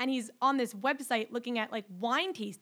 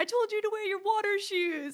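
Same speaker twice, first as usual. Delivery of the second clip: high yelling voice; 9 semitones higher than usual. Retelling a scene from Beach House where a character yells: imitating Marnie yelling. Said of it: "she yells".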